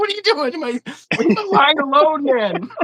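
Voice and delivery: shrill, startled, very high-pitched yell, acted out. Retelling telling a man in a boat to leave the line: retelling own yelling. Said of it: "and I'm yelling at him".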